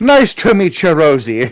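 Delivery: thick put-on Irish accent. Playing an Elvish character greeting Rosie at the cottage, in an Irish accent. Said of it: "Why are you Irish?".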